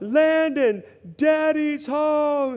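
put-on high-pitched, very high, carrying yell. Recounting how she'd call out to Landon when the speaker came home, imitating someone yelling. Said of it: "she'd yell out".

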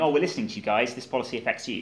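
normal talking voice

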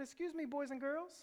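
put-on mildly baffled, calm tone. Retelling how she quieted a noisy cafeteria: imitating a puzzled, calm voice. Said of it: "She says in a puzzled, calm voice".

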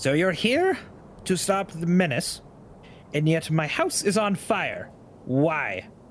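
put-on older halfling woman character voice. Game master voices an older halfling woman questioning the players. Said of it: "The halfling woman, who is older, / The halfling woman, who is older, about a little shorter than Theory, nice clothes, slightly wet now, walks up. / The halfling woman, / The halfling woman, who is o".

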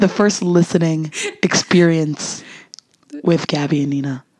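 sexy, smooth, sultry, soothing voice. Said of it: "really soothing right now".

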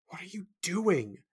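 hissing in embarrassment. Sim speaks to the narrator, embarrassed by him: hissed. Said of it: "Sim hissed at me".

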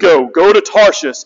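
put-on deep voice. Retelling the Jonah story as God sends Jonah off, deep God voice. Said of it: "God always speaks in a deeper voice".

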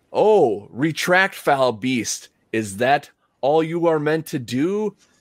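sudden, abrupt, high out-of-character scream. Recounting a game scene where Drake confronts a huge beast, imitating Drake screaming. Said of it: "just starts to scream".

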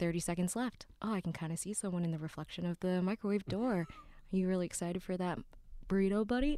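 steady documentary-style voice-over narrator voice. Retelling a Netflix April Fool's prank: imitating Will Arnett narrating. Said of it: "He was like, he's like".

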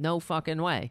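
ordinary delivery

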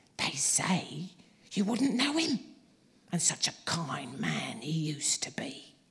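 loud, confiding, gossiping stage whisper. Mrs. Mardle tells a customer in the shop more news, in a loud whisper. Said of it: "continued in a loud whisper".

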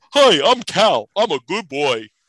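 loud put-on cat persona voice. Demonstrating how Cal talks, doing the Cal voice. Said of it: "this is the Cal voice".

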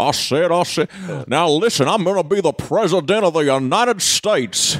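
smug cartoon Southern drawl. Mocking an actor's Southern accent with a Foghorn Leghorn voice. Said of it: "There's a foghorn leghorning around over here".

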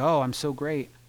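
ordinary talk, nothing marked

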